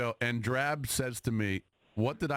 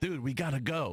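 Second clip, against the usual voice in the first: put-on abrupt, energized, urgent tone; 2 semitones higher than usual. Retelling how the other speaker sounded during yesterday's fight: imitating an abrupt energized tone. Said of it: "but your tone was".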